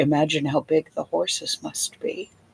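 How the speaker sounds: murmured under the breath. A narrator voices a woman murmuring in Draconic while staring into space; murmured under her breath. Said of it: "you hear her murmur under her breath".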